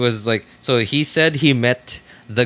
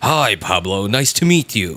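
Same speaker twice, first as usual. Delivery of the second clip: slow, epic movie-trailer announcer voiceover; 2 semitones lower than usual. Retelling the trailer voiceover guy greeting the comedian: Hollywood trailer voiceover voice. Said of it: "he actually talks like that in real life".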